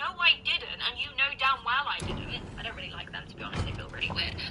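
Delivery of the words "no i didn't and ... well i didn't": put-on exasperated, annoyed, raised shouting voice. Retelling getting annoyed during an argument: retelling own annoyed shouting. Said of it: "I'm getting annoyed, so I'm shouting".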